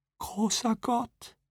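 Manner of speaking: very high, very soft, hushed tearful whisper. Listening to an account of a woman lost under the ice, Pamela whispers. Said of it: "flüsterte Pamela".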